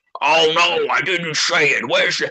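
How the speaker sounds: slow, drawn-out, backpedalling tone. Retelling how Karmic denied what he said: imitating Karmic denying. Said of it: "Then he goes".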